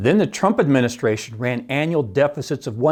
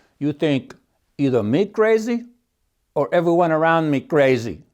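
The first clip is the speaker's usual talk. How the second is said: put-on Russian accent in English; 2 semitones higher than usual. Quoting a russian economist from a documentary, in a russian accent. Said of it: "in a great Russian accent".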